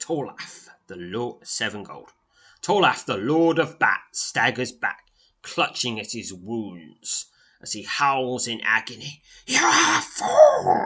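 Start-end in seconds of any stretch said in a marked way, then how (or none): 9.5-10.9 very high-pitched hissing voice. Narrator voices Tolef, the Lord of Bats, wounded, hissing through fangs. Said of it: "he hisses through the mesh of fangs".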